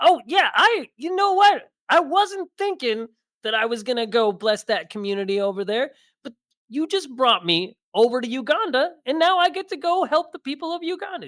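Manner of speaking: put-on voice pitched very high, sounding aspirational. Doing an aspirational version of Chris Rock: Chris Rock impression. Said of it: "here's aspirational Chris Rock".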